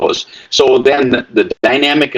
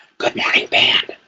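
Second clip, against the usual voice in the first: stage whisper projected loudly like a shout. Showing how they greet the band students in the morning, a shouted whisper. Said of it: "I'm going to shout at you now".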